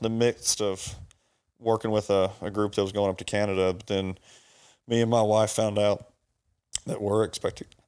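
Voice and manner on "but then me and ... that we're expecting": emotional, halting, choked up, voice breaking. Asked about upcoming work, the speaker shares that they are expecting: a little emotional. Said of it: "Sorry, I get a little emotional with it".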